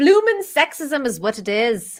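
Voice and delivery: unintended, accidental Scottish accent slipping in. Speaker complains about falling Disney stock, slipping into a Scottish accent. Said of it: "That was really Scottish of me".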